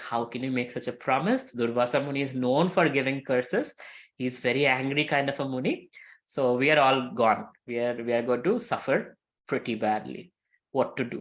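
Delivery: ordinary talk, nothing marked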